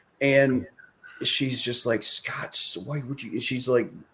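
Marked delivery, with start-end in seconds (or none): 2.1-3.3 put-on woman's muttering, higher and quieter. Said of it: "under her breath cursing him".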